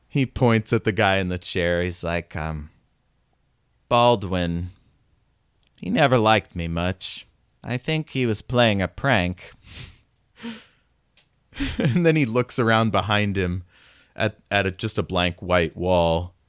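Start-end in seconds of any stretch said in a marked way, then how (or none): 3.9-9.5 put-on robot dialect voice.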